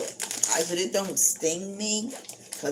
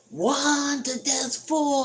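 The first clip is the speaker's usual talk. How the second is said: very slow, high, flat, drawn-out yell; 9 semitones higher, 4 dB louder than usual. Retelling the doctor's office calling out numbers: imitating someone yelling a number. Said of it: "they gotta yell the number".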